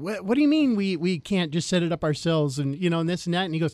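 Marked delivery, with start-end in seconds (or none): none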